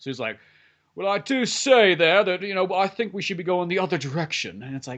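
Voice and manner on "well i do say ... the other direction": put-on clever-sounding, nerdy British accent. Voicing the nerdy guy with glasses, make him sound smart and British. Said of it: "Make him sound smart and British".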